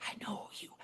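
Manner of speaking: whispered very softly. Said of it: "she whispers in my ear".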